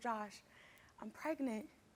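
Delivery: hushed, soft whisper, barely voiced, close. Retelling telling a partner the news: retelling a whisper. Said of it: "I whispered in his ear".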